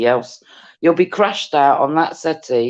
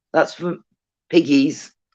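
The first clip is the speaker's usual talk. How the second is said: ordinary talk, nothing marked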